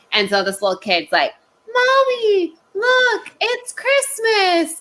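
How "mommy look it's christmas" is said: put-on very high, very slow child voice full of delight. Retelling what a little kid said to their mom: imitating an excited little kid. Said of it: "little kid being so excited about this".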